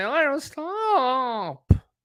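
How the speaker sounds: put-on whiny teenage voice, high and slow.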